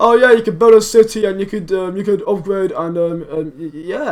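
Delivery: flat, bored, can't-be-arsed, uninterested rambling. Mimicking a man who sounds unbothered about the game, imitating someone bored. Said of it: "He doesn't sound arsed".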